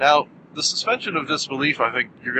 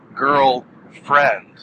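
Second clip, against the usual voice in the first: put-on break after "girl" before "friend"; 4 dB louder than usual. Marking it as two separate words: pause between girl and friend. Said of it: "I put a pause between those".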